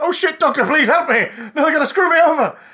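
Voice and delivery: shrill, very loud, very high, frantic panicked pleading. Retelling how the Master sounds when he loses his cool: imitating the Master losing his cool, panicking. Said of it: "Delgado always maintained a veneer of cool, until he got to those moments".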